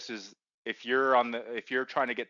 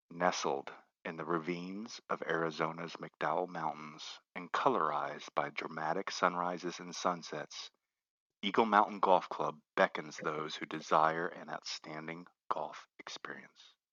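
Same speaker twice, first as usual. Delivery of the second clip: gentle, slow ASMR voice; 6 semitones lower, 5 dB quieter than usual. Asked to go ahead, the speaker reads a golf club blurb aloud: best ASMR voice. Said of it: "in my best A S M R voice".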